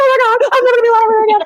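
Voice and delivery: mock upset crying wail, very high-pitched. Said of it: "because I was crying".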